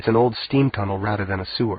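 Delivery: ordinary delivery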